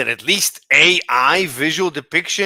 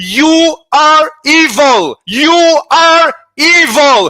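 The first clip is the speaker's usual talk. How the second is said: screamed, very high, loud and booming; 12 semitones higher, 10 dB louder than usual. Arguing about certain people while others ask why he's yelling, yelling. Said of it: "Why are you yelling?".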